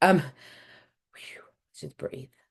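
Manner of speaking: whispered, breathy voice.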